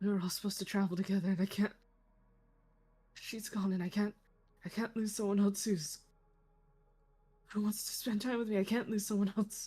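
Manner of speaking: grief-stricken, distraught, looping run-together babble. In a tabletop role-play scene, another character listening in: Echo muttering. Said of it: "Echo's probably muttering".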